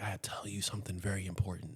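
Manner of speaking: speaking softly. Acting out his own last moments, telling everyone to lean in, soft voice. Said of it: "I speak in a soft voice".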